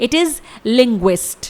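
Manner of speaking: very slow, careful model pronunciation.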